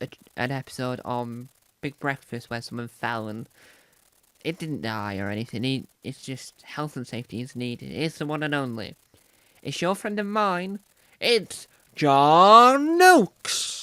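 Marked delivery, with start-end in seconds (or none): 7.9-13.8 very loud, booming, slow announcer voice, one word stretched. Introducing the chosen presenter with a flourish: put-on announcer voice. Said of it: "sound like a, an announcer and clapping".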